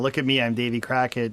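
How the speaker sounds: usual speaking voice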